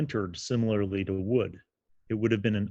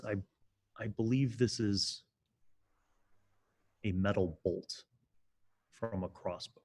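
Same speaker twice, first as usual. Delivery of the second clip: soft, hushed, barely-above-breath half-whisper; 7 dB quieter than usual. Game master voicing a character who walks over to a player's character, half-whispering. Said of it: "And he whispers".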